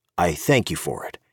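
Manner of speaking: ordinary delivery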